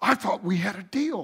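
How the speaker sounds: hissing. During the vows, the groom leans toward the minister and hisses. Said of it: "leaned toward the minister and hissed".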